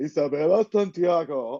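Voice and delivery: mannish voice, pageant-style announcer delivery. Imitating a pageant contestant introducing herself: imitating Isabela Santiago's mannish voice. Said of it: "she still sounds like a little mannish".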